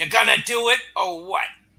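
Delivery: gruff-voiced. Voicing Nick Fury on the phone to the players: gruff voice. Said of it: "a gruff voice answers".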